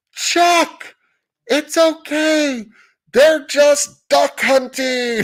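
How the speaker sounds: put-on very high, drawn-out, slow yell. Retelling a shout from across the lake amid shotgun fire: imitating Chris yelling. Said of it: "yells out".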